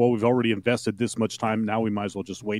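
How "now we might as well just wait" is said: normal talking voice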